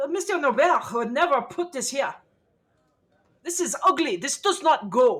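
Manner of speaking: loud shouting. In an acted scene, a character speaking to the others, yelling. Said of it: "maybe not yell so much?".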